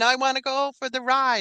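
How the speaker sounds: mock tearful, high, crying four-year-old's voice. Retelling being four years old and asking to go on the ride: imitating a crying four-year-old. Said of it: "still crying, going".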